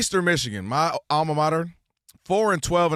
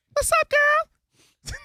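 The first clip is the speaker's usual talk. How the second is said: very high flirty voice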